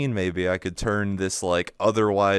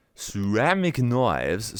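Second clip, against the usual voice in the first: put-on, sing-song Chinese commercial-style accent; 2 semitones higher than usual. Naming knives, imitating the accent from a meme commercial. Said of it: "I had to say it in that accent".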